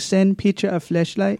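put-on Italian accent. Retelling a woman's voice memo, imitating an Italian accent. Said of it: "It was Italian".

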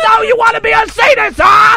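very high shriek. Playing Sam Kinison as a sadist: Sam Kinison impression. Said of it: "Sam Kinison comes back from the dead".

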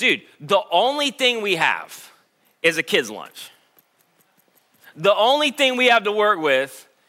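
heavy, sing-song, swooping sarcasm. Retelling Andrew's words about the kid's lunch: imitating a sarcastic remark. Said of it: "again, sarcastically".

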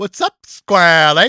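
loud, computer-like alien voice. Joking about an AI voice mixing E.T. and Stephen Hawking: E.T. in a Stephen Hawking voice. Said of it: "an A I combination of E T and Stephen Hawking".

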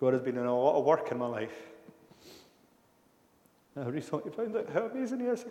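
tearful voice, crying while speaking. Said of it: "My apologies for the tears".

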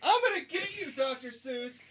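very high shout. Playing a game episode, calling down to a foe, shouting down. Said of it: "I need to shout down".

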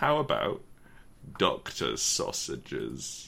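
very slow, low, drawn out, every bit spaced apart. Offering a suggestion to the others, said very slowly. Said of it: "Why did you say it so slowly?".

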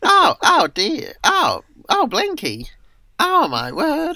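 very high, loud, squeaky, swooping, drawn-out voice. Doing the one squeaky character voice the speaker can do, squeaky Miss Magpie voice. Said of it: "That's the one kind of squeaky voice I can do".

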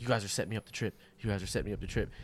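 whispering. Retelling a friend whispering to himself while tripping: imitating someone whispering. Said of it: "He starts whispering to himself".

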